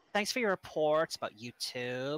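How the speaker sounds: put-on Californian accent, done for show. Told to do it California-style, voicing a YouTube message in a Californian accent.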